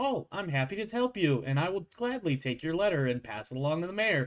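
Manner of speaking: polite, coldly cheerful tone with no real emotion. A game master voicing a receptionist taking a letter, in a cheerful but cold office tone. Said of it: "in that you know that office tone".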